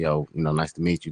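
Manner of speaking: ordinary talk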